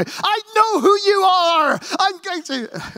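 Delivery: put-on very high, slow, drawn-out Scottish accent. Retelling a Scottish supervisor shouting on the Wimbledon radio: Scottish accent. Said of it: "in a Scottish accent".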